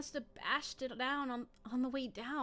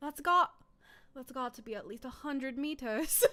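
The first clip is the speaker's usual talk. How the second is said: loud, clumsy, bad British accent; 6 dB louder than usual. Attempting to sound british: failed british accent attempt. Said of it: "how does uh British sound like? ... That's not British".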